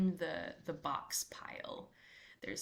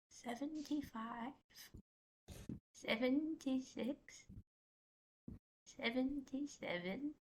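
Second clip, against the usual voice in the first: really soft voice, much higher; 8 semitones higher, 6 dB quieter than usual. A storyteller voices a wispy something heard counting among the boxes, really soft voice. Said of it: "A really soft voice say".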